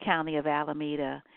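normal talking voice

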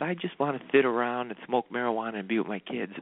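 voice of an aging heavyweight boxing champ. Retelling a boxer's post-fight interview answer: Mike Tyson impression. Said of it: "you don't do a bad Mike Tyson".

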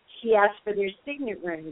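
ordinary delivery

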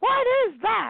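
mock very high, shrill teacher's yell. Speaker retells Miss Moss reacting to the gum stuck to his chair: yelling like Miss Moss. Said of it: "she starts yelling".

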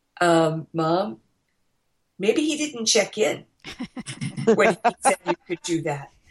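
put-on deadpan, dead-straight flat delivery. A mother retells what her kid said to her, mimicking a deadpan reply. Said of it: "he looked at me and deadpanned".

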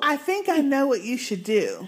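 sing-song voice, pitch swooping up and down. Retelling a scene where the character Carol speaks to a scared boy: imitating Carol, smiling. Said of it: "And she's smiling at that point".

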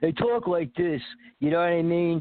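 put-on South Philadelphia Italian accent. Explaining how South Philly Italians speak, the speaker demonstrates a Rocky-style South Philly accent. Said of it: "South Philly Italians literally talk like Rocky".

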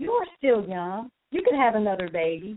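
mock-joking, playful tone. Retelling what a best friend said jokingly to a mother whose baby died, retelling a joking remark. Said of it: "she says jokingly".

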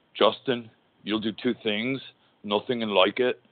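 put-on British accent, laid on firmly. Retelling a wrestler's line in his British accent: Davey Boy Smith British accent. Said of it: "Davey Boy Smith in his British accent".

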